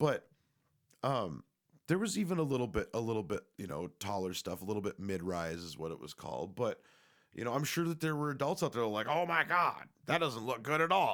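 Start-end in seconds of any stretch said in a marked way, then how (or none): 9.1-11.1 put-on loud, pitched-up, griping grumpy old man voice. Imitating adults reacting to young people's fashion: imitating a grumpy old man. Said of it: "sounded like a grumpy old man".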